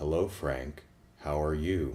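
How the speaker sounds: low, level, mechanical robotic monotone. Describing a film's robot voices, then demonstrating: HAL 9000 low monotone. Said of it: "HAL nine thousand type of low monotone".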